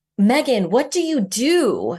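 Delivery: put-on slow, drawn-out, loud swooping shout. Retelling how a friend screamed a question across a long table: imitating a friend screaming. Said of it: "she just screamed across this long table".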